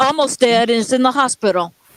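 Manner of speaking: plain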